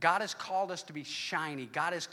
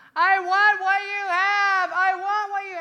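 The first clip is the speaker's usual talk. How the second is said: woman's scream, very high, very loud and drawn out; 14 dB louder than usual. Speaker in a booth retells a lady coming at him: imitating a screaming lady. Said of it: "she's screaming".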